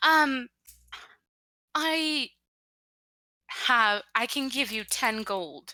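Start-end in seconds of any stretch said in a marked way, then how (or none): 1.7-5.7 very slow, attempted put-on British accent. Role-playing a character haggling with another player: attempted British accent. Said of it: "I'll try to be more British".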